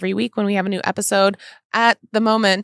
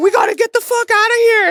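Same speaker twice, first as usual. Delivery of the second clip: put-on frantic urgency, very high and loud; 5 dB louder than usual. Comparing how two people pack bags: mock frantic. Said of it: "Mine's, like, frantic".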